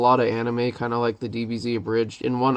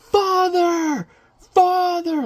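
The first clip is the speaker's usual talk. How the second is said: mock panicked shouting, higher pitch. Describing an animated scene to a friend, acting out a character imitating someone freaking out. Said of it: "he's freaking out and he's just like beating".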